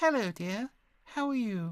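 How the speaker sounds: put-on very high, gentle old-lady falsetto. Speaker demonstrating the falsetto register in a talk on powerful speaking, falsetto elderly lady voice. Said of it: "It's often used by elderly ladies".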